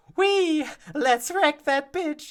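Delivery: very high, piping character voice. Showing how the character's voice sounded in the first episodes, very high-pitched voice. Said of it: "like very high".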